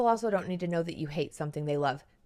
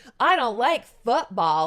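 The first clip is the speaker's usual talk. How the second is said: brash, loud, grating, abrasive broadcaster voice; 4 semitones higher, 7 dB louder than usual. Mocking someone who announces dislikes: imitating a loud, abrasive voice. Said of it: "just that loud, abrasive".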